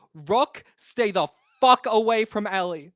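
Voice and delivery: very loud, full-volume, top-of-lungs scream. Voicing a character yelling a warning down a hall: yelling at the top of her lungs. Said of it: "yell at the top of her lungs".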